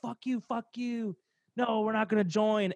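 angry yell. Retelling a dream where a brother refuses fascists: imitating brother screaming. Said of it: "screaming at him".

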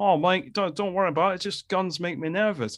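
put-on Australian accent, reassuring. Retelling a line that made you laugh, said to Mike by a man with an Aussie accent. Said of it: "in his Aussie accent".

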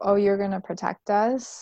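put-on mocking tone. Retelling a character's words to a companion: imitating mocking tone. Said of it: "she was kind of mocking him".

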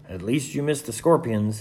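ordinary delivery

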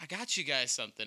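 plain

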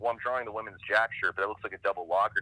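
ordinary talk

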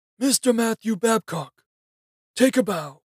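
very high, shrill shouted call. A stranger calls out to the narrator in a room, shouting. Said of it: "shouted the gray stranger".

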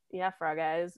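completely straight, dead serious deadpan delivery. Retelling a husband's teasing remark: imitating someone dead serious. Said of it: "look at me and dead serious, dead straight".

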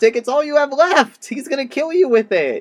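put-on upset tone. Retelling their own upset reaction to a movie scene: retelling being upset. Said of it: "we were so upset when that happened".

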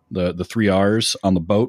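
normal talking voice

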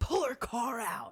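high, drawn-out screaming. Retelling how a man screamed in their face, acting out the scream. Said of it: "starts screaming in my face".

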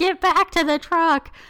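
high, loud yelling. Retelling everybody calling someone back to the truck: imitating people screaming. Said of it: "everybody is screaming at him".

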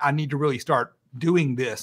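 ordinary delivery

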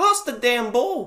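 very high, shrill, loud shout. Retelling watching a new signing lose the ball: imitating own yell at a player. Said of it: "I'm yelling at this guy".

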